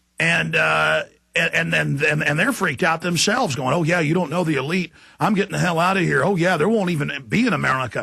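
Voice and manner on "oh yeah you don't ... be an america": ordinary talk, nothing marked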